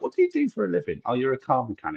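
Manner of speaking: mocking, very sarcastic, high and sing-song. Retelling replies to strangers asking for palm readings, retelling a sarcastic reply. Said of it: "I'll become very, very sarcastic".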